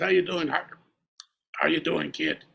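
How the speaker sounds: gravelly, drawn-out voice. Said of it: "He had kind of a gravelly voice".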